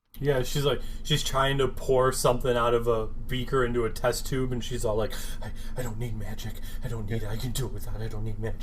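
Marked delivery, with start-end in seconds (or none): 5.4-8.6 acted, jittery, hushed, repetitive voice. Retelling a show scene, imitating a character desperately craving magic: imitating someone tweaking out. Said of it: "she's all fucking tweaking out again".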